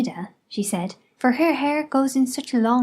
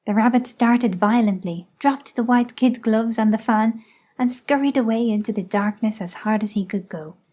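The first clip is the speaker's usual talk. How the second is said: ordinary delivery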